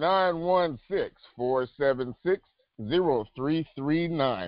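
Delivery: deliberately slowed delivery. Asked to slow down, the speaker repeats a phone number: slowed-down speech. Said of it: "Let me slow it up".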